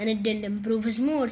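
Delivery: plain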